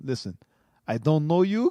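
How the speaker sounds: put-on speaking with an Arabic accent. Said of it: "'cause he had the accent".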